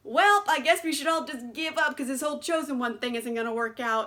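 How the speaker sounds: usual speaking voice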